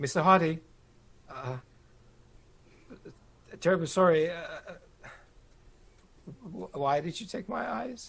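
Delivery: whimpering voice. Voicing an eyeless creature clawing at a door: whimpering. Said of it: "it continues to whimper".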